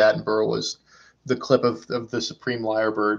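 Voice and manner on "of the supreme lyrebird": ordinary talk, nothing marked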